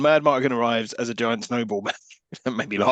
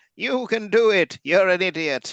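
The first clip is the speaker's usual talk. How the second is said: put-on bleating goat voice, much higher; 8 semitones higher than usual. Retelling how she has a go at him, speak her words talking like a goat. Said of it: "so now she's talking like a goat".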